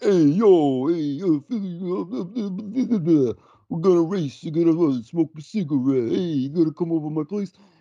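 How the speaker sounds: very high, aggressively dumb, dopey rambling babble. Describing a film's lead actor as playing himself: Sylvester Stallone impression. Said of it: "an impression of himself".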